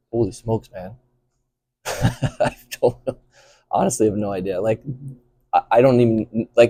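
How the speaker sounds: words broken up by laughter. Asked where they see themselves in five years, laughing while talking. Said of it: "I'm laughing because".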